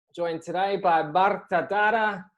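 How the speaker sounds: slow, put-on Spanish accent. Interview host introducing the guest, in a put-on Spanish accent. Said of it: "I'll put my Spanish accent on for that one".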